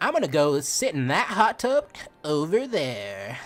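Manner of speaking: cheery, animated, sing-song, drawn-out cartoon voice. Quoting an audition line for a happy character: happy cartoon character voice. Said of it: "one of the lines was like".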